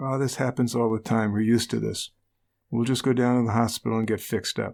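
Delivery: ordinary delivery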